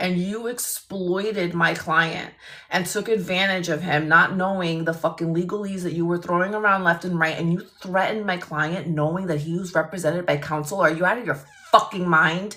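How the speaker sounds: ordinary talk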